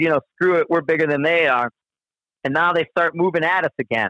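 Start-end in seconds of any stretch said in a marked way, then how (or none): none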